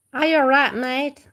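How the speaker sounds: put-on loud, high Australian accent. Looking at a wombat together and addressing it; Australian accent. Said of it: "This our Australian accent".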